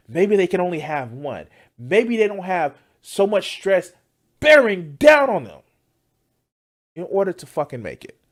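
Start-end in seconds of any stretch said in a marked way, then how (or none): 1.8-8.1 loud shouting yell. Speaker in the middle of a rant, yelling. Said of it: "I'm yelling like bass Pulo".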